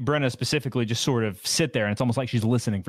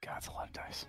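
quiet whispered aside. Adding up a lot of dice while the players wait: whispering. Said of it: "hear a D M whisper into the microphone".

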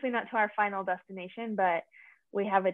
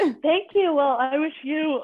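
talking through a yawn, pitched up; 7 semitones higher, 4 dB louder than usual. Returning good wishes to the other speaker, yawning while talking. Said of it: "I'm so sorry, I'm yawning".

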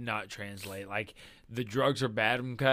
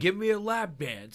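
aggressive, pushy, pitched-up voice; 8 semitones higher than usual. Retelling a story about a man at a strip club, mock-aggressive demand. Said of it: "he's like being real aggressive".

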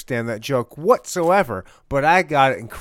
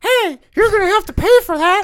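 very high, raised puppet voice, called out; 6 dB louder than usual. Retelling a scene where the librarian catches Rumpel ripping a book, Pinocchio voice. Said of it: "You sound like him".

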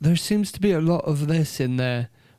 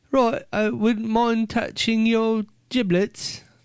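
high, slow, purring, flirty mock English woman voice. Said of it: "a woman and she's all".

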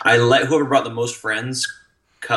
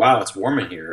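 mumbled, muttered under breath. Retelling what a kid said to him in the baptism water: an under-breath mutter. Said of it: "under his breath to me".

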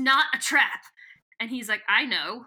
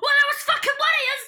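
very high, loud, put-on vague Scottish shout; 5 dB louder than usual. Recalling controllers who deny blame, the speaker bursts into a vaguely Scottish yell. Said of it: "sorry if I blew out my mic".

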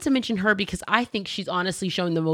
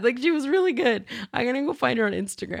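teary voice, much higher; 7 semitones higher than usual. Speaker praising a woman they really thought was great, tearing up. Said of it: "I'm tearing up already again".

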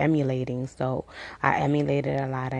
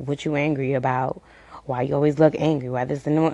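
ordinary talk, nothing marked

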